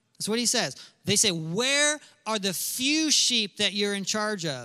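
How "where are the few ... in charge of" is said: play-acted, needling, sarcastic jab. Retelling the brothers' words to David: imitating sarcastic brothers. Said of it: "Do you sense a little bit of, uh, sarcasm".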